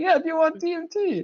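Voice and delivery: really loud, very high, delighted tone. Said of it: "really loud".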